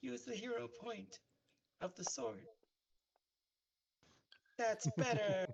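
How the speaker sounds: tiny, very high squeaky voice. Speaker voices a character from around the corner during the game: tiny Glizzy voice. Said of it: "Tiny voice from around the corner tells you".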